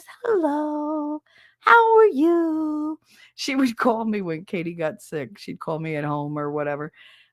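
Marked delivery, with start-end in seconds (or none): 0.2-3.0 school nurse voice, very high, very slow, drawn-out you. Retelling how a school nurse always talked on the phone: imitating her way of talking. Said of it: "she always talked like this".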